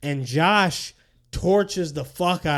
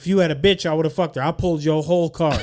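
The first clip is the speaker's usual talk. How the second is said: put-on gloating, taunting voice. Retelling how Josh ate Alex's taco, laughing at Alex: imitating Josh taunting. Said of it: "about to talk some shit".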